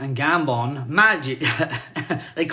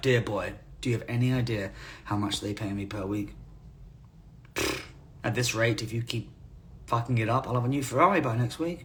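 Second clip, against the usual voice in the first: mock-deadpan delivery, much quieter; 4 semitones lower, 9 dB quieter than usual. Retelling what a man told them before going back on set, imitating deadpan delivery. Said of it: "He was absolutely deadpan. Said it like".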